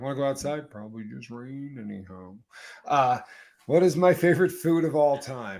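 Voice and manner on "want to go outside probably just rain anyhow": storybook donkey voice. Answering a chat comment about voices, doing an Eeyore voice. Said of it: "Eeyore voices are fantastic".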